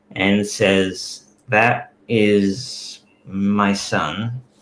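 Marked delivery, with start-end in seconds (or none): 1.5-4.4 slow, trembling words said on a sigh. Voicing a character staring at the floor: shaking and sighing. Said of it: "he shakes visibly and sighs".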